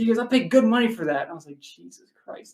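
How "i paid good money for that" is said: high, pissed-off, indignant, upset complaining. Retelling what an upset man said to the speaker and friends, imitating an upset man. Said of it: "like he's super upset with us".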